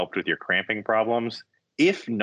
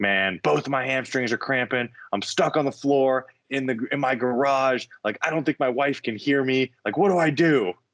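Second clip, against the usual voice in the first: frantic, high-pitched, distressed crying voice; 5 semitones higher than usual. Retelling Daniel's late-night call, stuck on his garage floor: imitating Daniel screaming. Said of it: "and he's like screaming".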